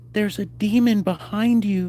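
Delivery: put-on small, soft, slow, girlish little girl voice. Retelling what a girl's voice said on your basement recording, in a little girl voice. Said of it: "in a little girl voice".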